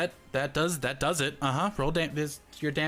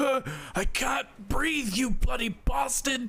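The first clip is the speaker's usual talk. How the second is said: strangled, pitched-up choking voice, forcing words out; 8 semitones higher than usual. Voicing a bandit squeezed in a grapple, choking bandit voice. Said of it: "Karma just casually squeezes him a little bit and says".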